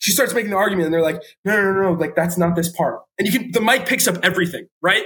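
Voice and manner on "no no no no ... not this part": ordinary talk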